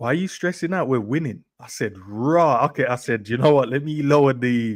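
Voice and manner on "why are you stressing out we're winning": very calm, quick and easy delivery. A father retelling his son's words to him, imitating a calm voice. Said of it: "I can imagine it was such a calm voice".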